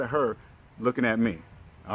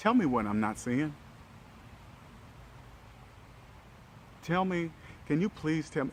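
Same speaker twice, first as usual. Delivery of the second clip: put-on whispered, breathy, sincere, humble pleading tone; 5 semitones higher, 7 dB quieter than usual. Retelling asking a partner mid-argument: retelling a humble, sincere plea. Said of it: "I humbled myself for a minute".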